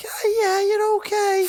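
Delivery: put-on very high, slow baby talk. Showing how people talk when they see a baby: imitating baby talk. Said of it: "when you see a baby, go like".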